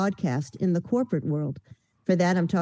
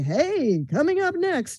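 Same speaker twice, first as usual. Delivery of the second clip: big presentational movie trailer announcer voice, slow and high; 9 semitones higher than usual. Describing what people think voiceover needs: imitating a movie theater announcer. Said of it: "or the movie theater guy".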